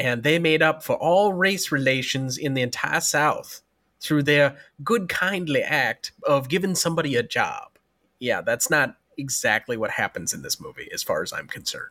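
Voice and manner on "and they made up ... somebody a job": put-on American Southern accent.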